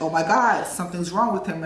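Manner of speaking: normal talking voice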